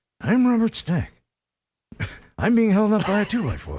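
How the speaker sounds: wooden, cardboard-stiff delivery. Mocking the host's stiffness, continuing the bit: Robert Stack impression. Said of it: "it could be a cardboard cutout of him".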